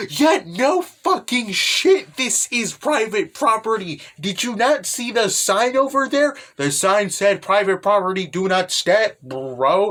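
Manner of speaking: slow, irritated, kind-of-mad, annoyed tone. Retelling a girl scolding trespassers on her property: imitating someone getting mad. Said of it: "she gets kind of mad".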